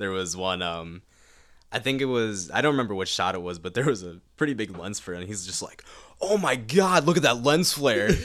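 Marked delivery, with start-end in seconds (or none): 6.2-8.1 mock delighted gush, very high pitched and loud. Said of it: "so happy about it".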